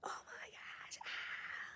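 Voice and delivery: terrified crying gasp, soft whispered sobbing.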